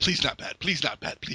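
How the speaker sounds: mock pleading while holding breath. Acting out stubbing a toe at night, imitating pleading while holding breath. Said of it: "You're just holding and waiting and".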